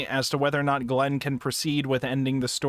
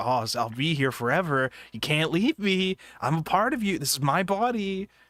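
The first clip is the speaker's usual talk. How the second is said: imitated whispering; 3 semitones higher than usual. Retelling a story character's lines: imitating him whispering. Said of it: "him whispering".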